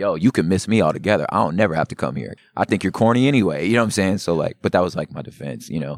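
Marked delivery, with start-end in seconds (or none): 0.0-3.7 mock-defensive, super defensive tone. Retelling what they said back then, acting out getting super defensive. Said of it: "I got super defensive".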